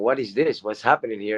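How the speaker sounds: ordinary delivery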